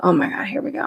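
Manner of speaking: acted, whispered, long-suffering exasperation, hushed under the breath. Retelling the husband's reaction to a chatty customer: imitating exasperated husband. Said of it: "it's like the end of the world for him".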